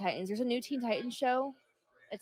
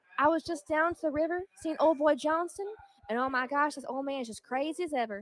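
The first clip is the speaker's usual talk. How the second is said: put-on Southern US accent; 5 semitones higher, 4 dB louder than usual. Joking that too few southern people do ASMR, telling a story in a southern accent. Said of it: "And some more in a southern accent".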